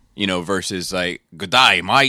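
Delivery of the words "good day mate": clichéd Australian accent. Speaker contrasts stereotypical brooklyn and australian greetings: stereotypical australian accent. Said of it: "I'm being stereotypical to both".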